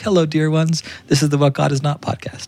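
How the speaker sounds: very high-pitched voice. Imitating the podcast's intro voice, an abbess: imitating Mother Theodora. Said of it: "So she's like".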